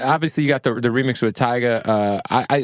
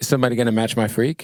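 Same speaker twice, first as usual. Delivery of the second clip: ordinary talk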